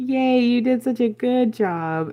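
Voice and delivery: mocking, insincere, sarcastic tone. Imagining a friend's reaction to the painting: imitating sarcastic praise. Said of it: "in the most sarcastic way".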